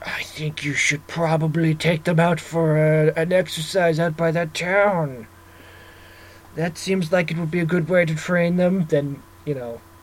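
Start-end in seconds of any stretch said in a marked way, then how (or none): 0.0-8.9 slow, sinister, evil villain voice. Acting out what a monster might say, in an evil voice. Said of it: "in their evil voice".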